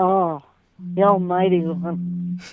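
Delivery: fake, put-on sexy, seductive voice. Host shows how women calling the show have to greet him, mock sexy voice. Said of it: "in a really sexy voice".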